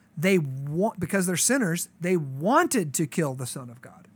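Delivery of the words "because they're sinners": ordinary talk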